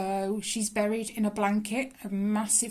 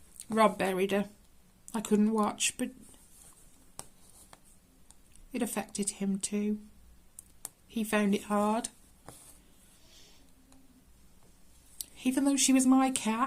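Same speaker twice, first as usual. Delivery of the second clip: voice strained, holding back tears. Telling how Rob buried the cat, holding back tears. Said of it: "I'm trying not to cry".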